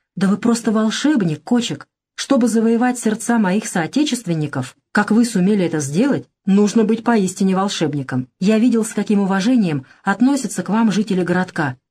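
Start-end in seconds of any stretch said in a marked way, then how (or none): none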